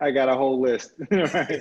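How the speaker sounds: laughing through the words. Asked about the biggest challenges and lessons learned, answering while laughing. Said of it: "Sorry, I'm just laughing".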